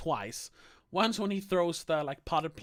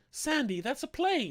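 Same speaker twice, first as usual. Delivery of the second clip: mock sweet, pitched-up delivery; 6 semitones higher than usual. Retelling a funny film scene, imitating a sweet way of speaking. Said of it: "she just says it in such a, like, sweet way".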